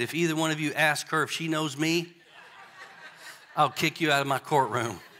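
hushed, quiet, kept-down undertone. Telling a courtroom story, quoting the judge warning both lawyers, retelling judge's hushed tone. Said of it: "And in a hushed tone".

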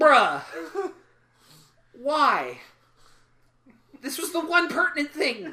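fed-up, exasperated, high and drawn out. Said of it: "he's like".

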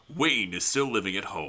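put-on movie trailer narrator voice. Asked to read a film's IMDb plot synopsis aloud, movie trailer guy voice. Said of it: "get your trailer guy voice in".

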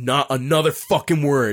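mock very loud outburst. Recounting turning around on someone two rows back who laughed: retelling a loud outburst. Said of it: "I said it like really loud".

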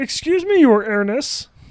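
loud, cartoonish high voice. Doing the one cartoon character voice they can do: Marvin the Martian voice. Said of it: "But he goes".

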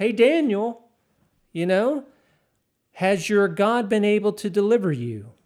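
loud yell, hopeful and anxious. Retelling the king yelling into the lions' den to daniel, retelling the king's yell. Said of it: "here he's yelling into the den".

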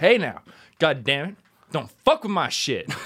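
sudden, loud country tough-guy outburst, rough rural voice. Retelling how Drew snapped at a kid messing with his shoes: imitating Drew as a redneck. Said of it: "He just turned into this redneck".

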